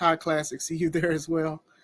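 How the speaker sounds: normal talking voice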